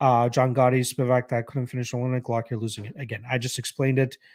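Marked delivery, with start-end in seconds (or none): none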